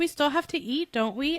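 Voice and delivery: put-on snarky delivery. Retelling how a character answered a question: imitating a snarky answer. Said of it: "he answered kinda snarky".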